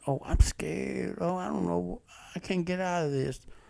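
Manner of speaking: mock scared, frightened voice. Mocking a woman abroad who turns around after calling police: imitating someone scared. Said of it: "Then you turn around".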